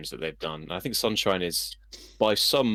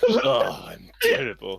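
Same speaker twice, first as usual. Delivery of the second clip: loud, swooping, disgusted exclamation; 3 semitones higher, 5 dB louder than usual. Retelling a bit where Ivan the Terrible speaks, sounding mock-disgusted. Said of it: "Like he sounds disgusted".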